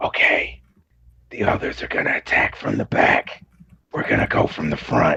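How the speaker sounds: loud whisper that sounds like a yell. Playing a character looking over at Tetra and Dixon, whisper yell. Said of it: "He's like gonna whisper yell".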